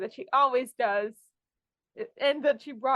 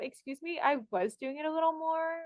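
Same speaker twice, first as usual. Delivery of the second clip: put-on indignant, sassy tone, pitched up; 5 semitones higher, 3 dB quieter than usual. Retelling an actress's reply in her audition when asked for more, mock-sassy retort.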